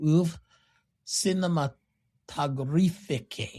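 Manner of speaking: French word pronounced with a Russian accent. Pronouncing a French film term for the other speaker: Russian-sounding French pronunciation. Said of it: "the Russian pronunciation of French there".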